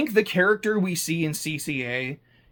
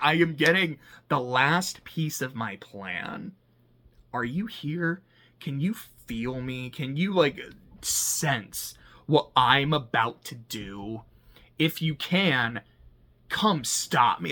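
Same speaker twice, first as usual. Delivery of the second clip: mock goading, baiting tone, slow and drawn-out; 2 semitones lower, 3 dB quieter than usual. Retelling how a film character calls out to Amuro: imitating a taunt. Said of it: "it's a taunt".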